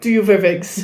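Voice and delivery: put-on German-accented voice. Quoting a favorite audio clip to friends, in a German accent. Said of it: "doing the German accent".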